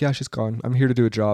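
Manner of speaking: mock-emotionless delivery. Retelling a man's reaction on the show to a girl sent home, imitating a flat, emotionless tone. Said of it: "he just had no emotion about it".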